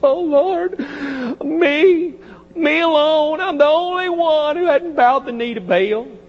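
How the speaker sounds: small, teary, whimpering crying voice. Retelling Elijah bowing down to the Lord, imitating Elijah whimpering. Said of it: "you can hear his little whimpering voice".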